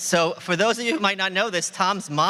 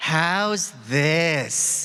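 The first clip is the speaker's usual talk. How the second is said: put-on woman's voice, lower pitch; 3 semitones lower than usual. Asked for a lady voice, trying it out: lady voice. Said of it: "let's hear your lady voice".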